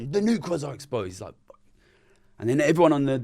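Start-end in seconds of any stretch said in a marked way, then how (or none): 0.0-1.1 loud, alarmed shouting. Speaker retells the guy at the next desk standing up, imitating a loud shout. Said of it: "He shouts out loud".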